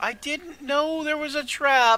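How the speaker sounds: tiny, very high little voice crying out. Narrating a voice calling up from a hole in a trap, tiny voice yelling. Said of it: "a very tiny voice yell".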